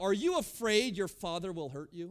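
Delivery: derisive, scoffing, taunting sarcastic tone. Retelling how a friend mocked Jan for wanting to go home, mock-sarcastic question. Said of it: "and sarcastically".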